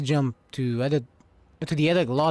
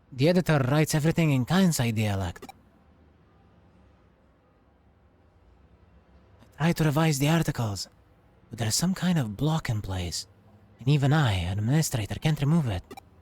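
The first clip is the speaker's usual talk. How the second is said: speaking in a whisper. Digipedia's administrator confides to the listener so no one else hears, whispering. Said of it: "I'll whisper it to you for now".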